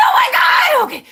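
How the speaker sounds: excited shouting. Host announcing casting news to viewers, yelling excitedly. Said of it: "Forgive me for yelling at at the viewers".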